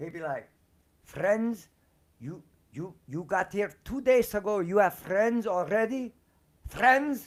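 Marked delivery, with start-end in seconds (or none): 1.0-7.3 put-on angry, thick Hungarian accent, raised and high. Speaker retells their stepdad's reply to going out with friends; strong hungarian accent. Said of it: "so he had a real strong accent".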